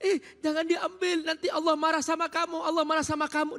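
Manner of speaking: put-on child voice, shouting while crying. Speaker tells the audience about their child's toy being taken; imitating a child shouting. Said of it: "Dia sambil teriak-teriak".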